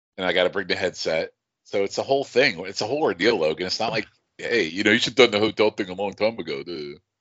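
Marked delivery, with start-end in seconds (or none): 4.4-7.0 mocking, mechanical, printer-like voice. Mocking a friend's advice in his voice: imitating Logan mockingly. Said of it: "That's me making fun of Logan".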